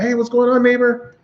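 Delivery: mock, very high, falsely innocent, playing dumb. Retelling greeting a screaming neighbor: retelling feigned innocence. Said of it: "I act like I don't know".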